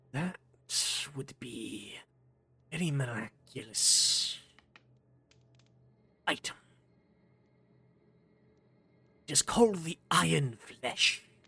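hushed whisper, close to the ear. Voicing a tall figure who whispers right beside a player's ear: whispering voice in the ear. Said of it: "his traveling yet whispering voice right next to your ear".

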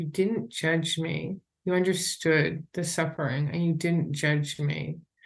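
plain

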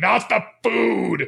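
put-on grand, rasping, rough, high declaiming voice. Retelling Brian's reaction to the snack bar price cut, speaker quotes Brian's booming voice. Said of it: "in the most booming voice ever".

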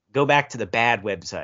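ordinary talk

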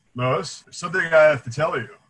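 bold, loud, booming heroic superhero voice. Retelling the scene where he is about to tell her, in Superman voice. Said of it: "he's got the Superman voice".

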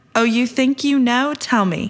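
play-acted, a little sarcastic, tongue-in-cheek voice. Paraphrasing God questioning Job: imitating God, sarcastic. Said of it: "tongue-in-cheek or a little bit sarcastic voice, uh, of God".

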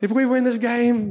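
high, bad British accent.

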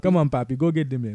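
Haitian-accented speech. Asked for some Haitian-accented English, the speaker calls out in a Haitian accent. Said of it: "give me some Haitian accent English".

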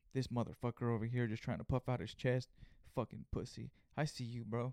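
put-on muttering under the breath. Retelling what a customer said while being rung up, imitating muttering under breath. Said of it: "he starts saying it under his breath".

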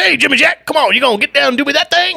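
sped-up, very high, rough, crazed rasp. Showing how the impression is sped up: Charles Manson impression, sped up and crazier. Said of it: "the Charles Manson impression is just sped up and a little crazier".

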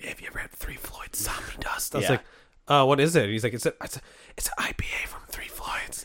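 put-on conspiratorial whisper. Recounting what a former coworker once said, retelling a coworker's whisper. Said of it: "why are you whispering?".

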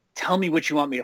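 imitated whisper. Retelling some guy who grabbed them from behind: imitating a whisper. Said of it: "whispers in my ear".

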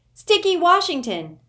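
shrill, very high, very loud nervous outcry. Reading a story aloud, voicing Sticky's nervous cry. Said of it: "Sticky's nervous voice crying out".

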